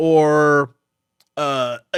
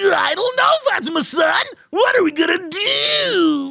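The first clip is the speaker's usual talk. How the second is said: tiny gremlin voice, much higher in pitch. Describing the character Gigi, the speaker acts out his line; Gigi tiny gremlin voice. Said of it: "Gigi is a little tiny gremlin".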